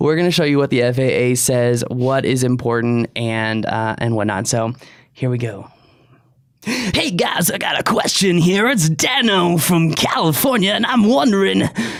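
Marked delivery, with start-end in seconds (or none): 6.6-11.6 wild, put-on crazy radio DJ accent. Imitating a friend asking a drone question: crazy DJ accent imitating Dano. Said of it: "crazy D J accent".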